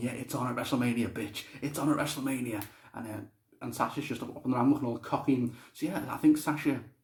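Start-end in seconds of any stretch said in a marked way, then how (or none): none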